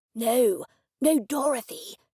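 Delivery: harsh slow whisper. Reading a story, a character answers the narrator out in the front yard, harsh whisper. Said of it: "he said in a harsh whisper".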